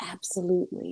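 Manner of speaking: soft, casual, whispered delivery.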